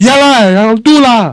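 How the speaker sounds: very high, loud, drawn-out voice. A speaker acts out a child's negative reply to a parent, imitating a child's raised voice. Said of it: "A negative response could be like".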